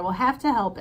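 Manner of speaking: ordinary delivery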